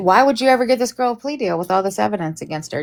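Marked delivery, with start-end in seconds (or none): none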